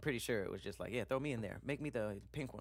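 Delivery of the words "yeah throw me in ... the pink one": normal talking voice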